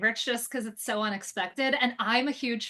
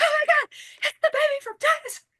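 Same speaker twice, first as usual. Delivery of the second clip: very high, loud, unhinged excited shriek; 5 dB louder than usual. Retelling seeing a replica at a studio: imitating her own excited screaming. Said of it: "I started screaming".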